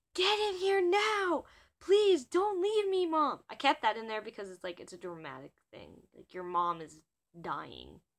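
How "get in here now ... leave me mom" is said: mock desperate shrieking, very high, drawn-out, panicked. Retelling a moment of screaming to their mom, reenacting the panicked scream. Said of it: "I started screaming to my mom".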